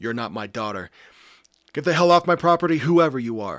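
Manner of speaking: very loud, terrified scream at full lung power. Backing away from the front door from an unknown visitor, screaming. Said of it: "I screamed".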